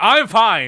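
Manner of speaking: emphatic shouted exclamation. Retelling a character's denial, Apollo Justice yelling. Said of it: "Apollo Justice yelling".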